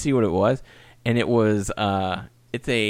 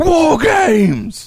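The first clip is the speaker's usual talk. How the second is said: belted out proudly, very loud and high; 9 dB louder than usual. Retelling a wrestling segment, imitating William Regal proudly announcing. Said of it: "so proud 'cause he gets this moment to go".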